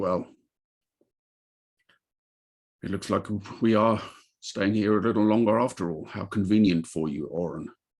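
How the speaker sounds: scornful, contemptuous tone full of disgust. Voicing Arnell slamming a door: disgusted. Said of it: "slams the door in disgust".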